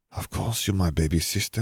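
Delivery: ordinary delivery, nothing marked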